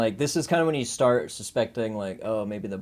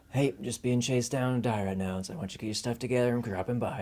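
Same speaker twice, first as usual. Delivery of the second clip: relaxed, calm, even-keeled easy voice; 4 dB quieter than usual. Retelling a character's message to his girlfriend: imitating a really calm phone message. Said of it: "really calm when he talks to her".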